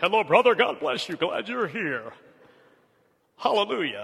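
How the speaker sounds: pompous preacher voice. Imitating preachers greeting people on Sunday, imitating a preacher's platform voice. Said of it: "talked with a steeple stuck in their throat".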